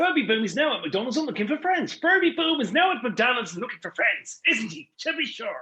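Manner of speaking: put-on Irish accent. Performing an Irish-accented ad script ending with "to be sure": Irish accent for an ad. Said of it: "doing exactly the same voice you were doing".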